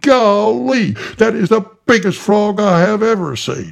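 very high, loud, almost bellowing. Narrator reads Council seeing the frog: almost bellowing. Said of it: "he almost bellowed".

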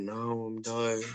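quiet, slow, fed-up, defeated tone. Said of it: "He'd have been like".

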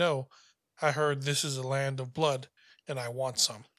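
ordinary delivery

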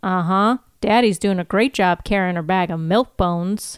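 plain

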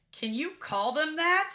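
acted, indignant, shocked tone, very high and loud. Recounting a night at a bar, a lady speaks up: retelling an offended question. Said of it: "she was like offended for us".

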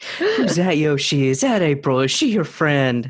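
voice swooping around in pitch. Speaker retells what they said to a dog named Yoshi, in dog baby talk. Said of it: "I give the whole dog baby talk thing".

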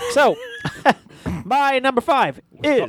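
very high, slow, drawn-out holler. Asked what made the number five pick: yelling. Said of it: "Stop yelling".

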